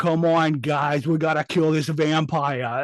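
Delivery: slow, drawn-out, bad fake Brooklyn accent. Mocking an actor's line about killing a vampire, in Dan Stevens's bad Brooklyn accent. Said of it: "Why is he trying to do a Brooklyn accent?".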